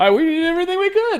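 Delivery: voice jumps a full octave, very high. Imitating a man's response, with his voice an octave higher. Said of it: "His voice gets higher, like an octave higher".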